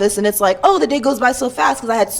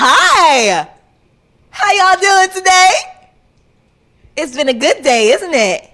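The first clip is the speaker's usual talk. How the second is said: high, loud, relentlessly chipper, overly cheerful, drawn-out "hi"; 7 semitones higher, 5 dB louder than usual. Showing how a chatty coworker greets people: imitating an overly cheerful coworker. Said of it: "let me show y'all what she's like".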